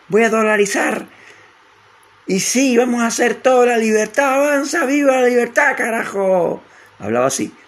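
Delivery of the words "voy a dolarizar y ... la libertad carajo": very high-pitched, shrill, nasal half-yelling. Describing how a man used to talk, imitating his speeches: nasal, half-shouting imitation. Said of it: "muy como medio gritón".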